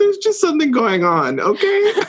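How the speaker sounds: high, laughing, defensive brush-off. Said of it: "I was like".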